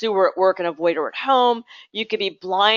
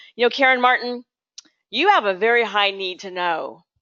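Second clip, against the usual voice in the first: mock severe, disapproving, stern boss voice. Retelling what a first corporate boss said, imitating Roberta's stern voice. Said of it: "kind of in a stern voice".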